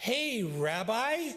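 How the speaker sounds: loud, high-pitched hollered shout. Retelling a teenager calling across a supermarket: imitating a teenager shouting loudly. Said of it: "shouts at the top of his lungs".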